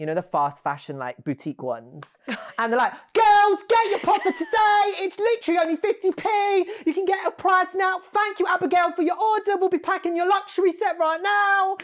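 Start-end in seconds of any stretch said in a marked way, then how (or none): 3.1-11.8 very high, loud screaming shriek. Describing online fast-fashion boutique sellers, imitating Dolly Mix Boutique sellers screaming. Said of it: "why are you screaming at me?".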